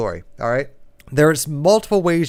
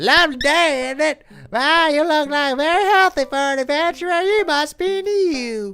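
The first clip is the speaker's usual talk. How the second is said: better put-on woman's voice, pitched higher; 12 semitones higher than usual. Redoing the healer's greeting with a better voice: better put-on healer lady voice. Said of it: "she needs a better voice than that".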